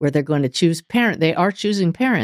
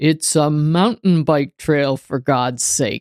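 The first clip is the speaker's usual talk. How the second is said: grand, booming proclaiming voice. The speaker quotes an inner voice they heard: booming voice. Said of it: "I hear this booming voice say".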